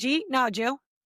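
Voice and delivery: put-on hometown regional accent. Explaining the dad's test for spotting locals, say it in local hometown accent. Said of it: "the number one way you can tell if somebody's from where we're".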